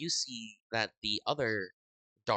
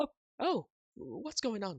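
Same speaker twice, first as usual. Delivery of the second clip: shrill, very high-pitched robot droid voice; 12 semitones higher than usual. Voicing a droid next to a player who is hiding: droid voice. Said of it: "another droid who sort of looks to you and says".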